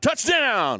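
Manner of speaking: talking loud. Testing the headset level when asked to speak up: talking loud. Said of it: "talk loud like you normally would again".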